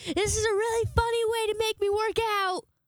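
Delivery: shrill, very high calling-out yell, screaming. Retelling running after the escaped dog: retelling own screaming. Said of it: "I'm screaming".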